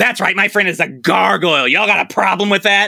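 mock, imitated yelling. Recounting how a man shouts into the phone about his friend, imitating someone shouting. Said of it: "And he shouts into the phone".

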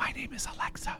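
soft, breathy, barely voiced, very quiet whisper. Retelling the smart speaker whispering its answer back: imitating Alexa whispering back. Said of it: "and whisper back".

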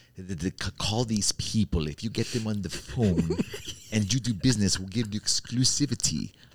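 put-on rough, butchered Austrian accent. Quoting a man who gave him contacts, in the man's austrian accent. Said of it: "He was talking in this Austrian accent".

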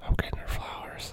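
soft, hushed whisper right into the mic. Telling listeners a secret gift while the other plugs ears: whispering close to the mic. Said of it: "'Cause I whispered into the mic so close".

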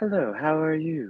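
calm, high British accent. Discussing GPS voices, the speaker demonstrates a calm British accent. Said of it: "pleasant and calm British voices".

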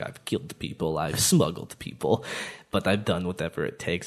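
put-on hushed, breathy Russian accent, trailer voiceover style. Retelling a voiceover he heard, doing the Russian voice. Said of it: "this Russian voice".

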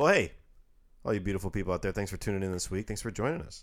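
very fast, rushed delivery. Thanking listeners for tuning in this week, very fast. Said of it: "You just spoke very fast".

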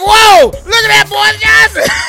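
playful, high, pretend yell. Acting out screaming at the ballet: mock screaming at the ballet. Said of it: "You can scream at the ballet now".

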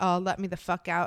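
acted-out, mock panicked pleading tone. Retelling a 13-year-old girl's words as she keeps panicking, mock-panicking. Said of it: "she's still panicking".

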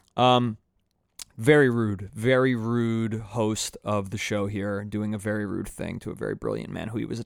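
normal talking voice

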